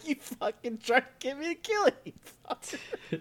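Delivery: very high, shocked, blurted outburst. Retelling a scene where Kami is shocked: shocked Kami voice. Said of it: "He has, like, a shocked face".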